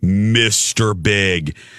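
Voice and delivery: put-on low cartoon voice. Retelling how Colin calls out to Biggie, in a Grinch voice. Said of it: "like the Grinch".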